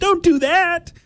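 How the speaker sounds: very high, whiny nerd voice. Retelling what i said out loud when caught off guard, in a whiny nerd voice. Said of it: "I used this like whiny nerd voice".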